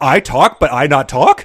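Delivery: loud, high, slow, puzzled dog voice. Joking that Queenie is like a dog that heard a TV dog: imitating puzzled Queenie as a dog. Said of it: "Queenie puzzled 'cause she's like a dog".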